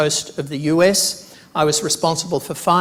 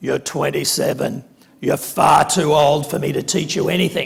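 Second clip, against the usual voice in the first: mock-grumpy, put-on professor voice. Recalling asking to do a PhD, speaker quotes Don, imitating Don's grumpy voice. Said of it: "in his very grumpy voice".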